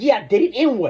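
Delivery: short-tempered, testy, irritated retort. Retelling own reply to onlookers after a fight: retelling own testy reply. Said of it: "I started getting testy".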